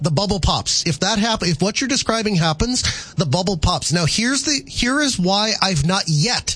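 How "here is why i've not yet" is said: slow, heavy stress on the word yet. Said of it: "I emphasize the word yet".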